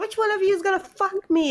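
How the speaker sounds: piercing, very high-pitched, shrill yell. Retelling a scene where Claudia yells at the others: imitating Claudia yelling. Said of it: "'cause she yells".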